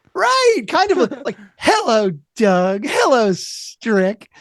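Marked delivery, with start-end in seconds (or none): 1.5-4.1 fun, sassy delivery, slower. Speaker illustrates the tone the speaker hears, sassy George from Seinfeld voice. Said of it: "in a really fun, sassy way".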